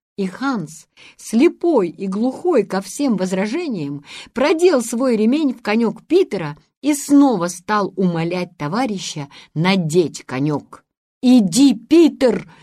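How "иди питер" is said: yelled out, loud shout. Calling out from the line to a comrade, urging him on: shouted. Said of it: "крикнул Ламберт из шеренги".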